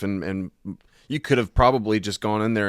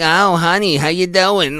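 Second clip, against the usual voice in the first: put-on very loud, creaky aged voice; 10 semitones higher, 9 dB louder than usual. Joking about growing old at sixty-five, creaky old voice. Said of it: "start getting really creaky".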